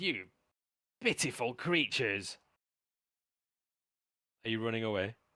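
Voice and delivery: words full of open anger. Voicing a character calling after those running away, in an angry voice. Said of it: "you hear the anger in his voice".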